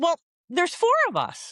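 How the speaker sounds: put-on very high, eager young man's voice, swooping. Retelling a young man's answer heard on a spirit box: imitating an excited young man. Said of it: "I heard a young man's voice go".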